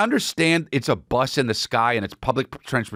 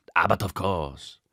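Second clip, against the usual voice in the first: slow, put-on French accent; 6 semitones lower, 3 dB quieter than usual. Retelling what a flight attendant asked: imitating a french accent. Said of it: "what's the French accent?".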